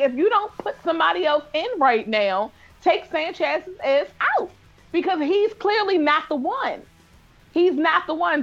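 acted, partly yelled delivery. Retelling an Instagram post made during a game: imitating own past yelling. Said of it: "I'm yelling".

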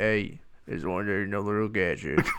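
put-on raspy actor voice. Retelling doing a Bradley Cooper impersonation around the house all week. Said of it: "kinda going".

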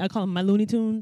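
usual speaking voice

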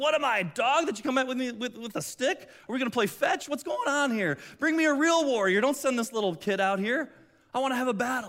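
put-on taunting giant voice. Retelling the giant mocking the boy with a stick: imitating Goliath taunting. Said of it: "he's taunting him".

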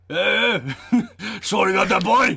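loud, high-pitched cartoon-character voice. Imitating Carl from Aqua Teen Hunger Force saying a line: Carl from Aqua Teen Hunger Force voice. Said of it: "that's like Carl from Aqua Teen Hunger Force".

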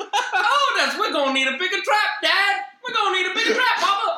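put-on old southern lady voice, very high. Imagining someone finding a bat and calling to his dad: old southern lady voice. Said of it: "What did you suddenly become? An old southern lady?".

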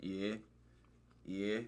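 put-on drawn-out, deep Australian accent.

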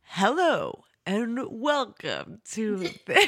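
grand, very slow, drawn-out trailer announcer voice. Starting the episode intro in a Mister Movie Phone voice. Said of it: "I was trying to do Mister Movie Phone".

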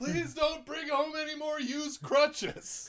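high, tearful wailing voice.

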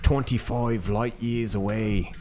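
Australian accent. Joking around with the others on the show, in an Aussie accent. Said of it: "there's the Aussie accent".

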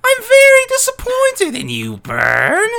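very high, loud, swooping, sing-song villain voice. Reading video game dialogue aloud, in a Cole voice. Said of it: "That's a good Cole voice".

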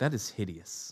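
put-on low quiet voice. Telling a story about the babysitter's reaction, imitating the babysitter. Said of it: "And she's like".

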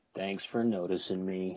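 mopey, downcast put-on gloom, low and soft. New co-host answers the host's introduction on the show with an Eeyore impression. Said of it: "I was channeling my inner Eeyore there".

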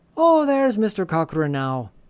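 put-on unhurried deliberate Irish accent. Asked again to try the character's line: Irish accent. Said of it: "how about you give it a shot".

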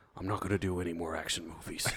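very quiet, hushed, under-the-breath delivery. Retelling an actor's interview after being asked for a Liam Neeson voice. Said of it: "do it in your Liam Neeson voice".

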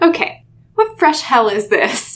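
bone-dry tone. Recapping a story scene, quoting Tobias, mock-dry. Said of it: "And he says it very dryly".

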